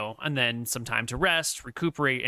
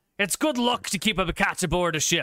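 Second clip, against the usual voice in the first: acted-out shouting, higher pitch; 5 semitones higher than usual. Voicing Wiley answering a yell from another room, yelling back. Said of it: "Wiley will yell back at you".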